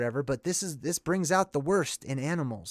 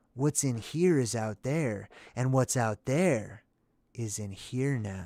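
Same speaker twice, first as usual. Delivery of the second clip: put-on stoner voice, lower pitch; 4 semitones lower than usual. Quoting a movie character's rant: Cheech Marin impersonation. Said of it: "my Cheech Marin impersonation".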